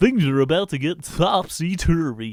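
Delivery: rom-com trailer announcer voice. Trying out a 90s film trailer bit, the speaker pitches a rom-com in trailer announcer voice. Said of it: "Except for I'm doing the rom-com".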